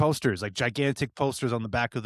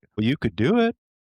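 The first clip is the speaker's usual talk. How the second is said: loud, raised voice leaning hard into the tone; 3 semitones higher, 6 dB louder than usual. Retelling an interview answer in the actor's tone: imitating Robert Downey Jr.'s tone. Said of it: "take that tone and run with it".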